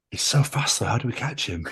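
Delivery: muttered, mumbled under breath. Retelling a reply said to a dinner suggestion: muttering under breath. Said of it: "under my breath".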